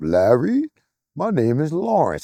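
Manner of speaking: slow, professorial narrator voice. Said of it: "You nutty professor sounding motherfucker".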